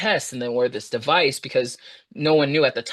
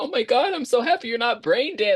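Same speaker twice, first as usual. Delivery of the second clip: mock tearful crying in a very high-pitched voice; 10 semitones higher than usual. Retelling waking up in hospital, quoting the husband, imitating him crying. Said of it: "And he's like crying".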